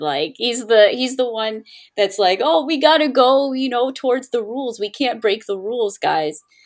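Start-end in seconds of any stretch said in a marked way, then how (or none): 2.4-6.4 exaggerated dumb, goofy, dopey character voice. Showing the voice given to a rule-following character, derpy character voice. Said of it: "I gave him the most derpiest voice ever".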